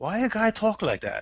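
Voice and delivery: put-on heavy Japanese accent. Retelling what a roommate said about a game voice: thick Japanese accent. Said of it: "in his thick-ass Japanese accent".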